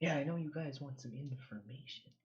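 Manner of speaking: soft-spoken, quiet character voice. Speaker voicing the mayor to a group wanting information, soft-spoken. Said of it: "Why is she so soft spoken?".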